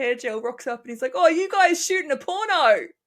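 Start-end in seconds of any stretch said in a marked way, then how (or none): 1.1-2.9 put-on thick, laid-on New Zealand accent, loud and high. Imitating a Kiwi guy who came up to them, heavy Kiwi accent. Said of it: "this heavy Kiwi accent".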